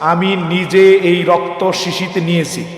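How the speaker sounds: very slow, emphatic, each word weighted.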